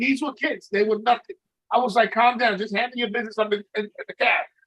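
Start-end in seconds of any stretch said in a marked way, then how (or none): none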